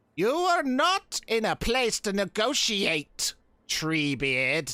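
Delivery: cackling laugh in the voice. Narrating a story, voicing a figure who addresses Treebeard, cackling while speaking. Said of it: "He cackles more and he says".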